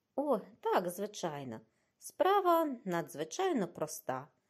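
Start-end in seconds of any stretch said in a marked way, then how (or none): none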